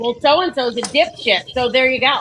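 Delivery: ordinary talk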